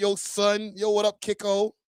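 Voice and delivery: put-on casual New York street accent. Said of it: "The New York accent, you can hear it".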